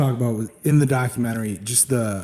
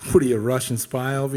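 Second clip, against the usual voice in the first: plain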